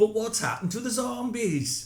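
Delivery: put-on Bristol accent, slipping Welsh. Reading a listener's message aloud in a put-on voice, accent going a bit welsh. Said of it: "It's gone a bit Welsh".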